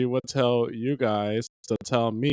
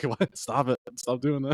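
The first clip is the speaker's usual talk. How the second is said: mock fed-up, irritated, slow, annoyed delivery; 4 dB quieter than usual. Retelling a girlfriend's reply to being patted: imitating someone annoyed. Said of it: "She was just annoyed".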